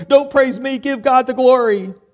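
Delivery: shrill, very high, loud hysterical cry. Retelling a woman's shocked reaction to being praised, in a mock-hysterical voice. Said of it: "saying in a hysterical voice".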